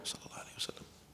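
hushed, very quiet private whisper. Showing how to pray quietly enough for yourself to hear: whispered to yourself. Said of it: "like you whisper it to yourself, right? ... Like that".

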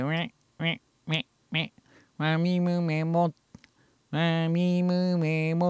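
voice resonating in nose. Speaker demonstrates a voice that resonates in the nose: nasal voice. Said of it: "鼻に響く声ですね。これを鼻声と言って".

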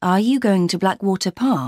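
usual speaking voice

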